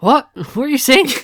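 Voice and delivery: high, loud, baffled "what".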